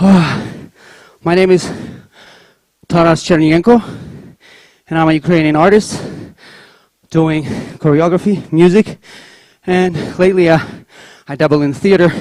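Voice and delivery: winded, catching breath. A Ukrainian artist introducing their work to an audience, out of breath. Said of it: "let me catch my breath a little bit".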